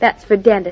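ordinary delivery

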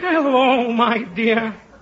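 put-on elderly man's voice. Demonstrating to the other speaker the voice you'll use: an old man's voice. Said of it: "My old man's voice. It'll be".

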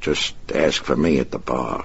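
plain reading voice

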